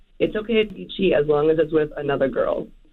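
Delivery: normal talking voice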